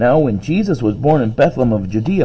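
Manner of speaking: plain reading voice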